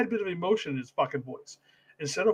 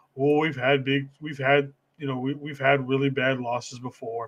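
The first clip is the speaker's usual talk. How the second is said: mopey, glum, flat droning monotone; 5 semitones lower than usual. Mocking how a player talks about losses: mopey Nick Bosa impression like Eeyore. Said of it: "Fucking sound like Eeyore and shit".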